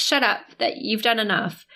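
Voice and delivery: ordinary talk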